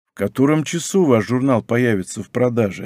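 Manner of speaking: ordinary delivery, nothing marked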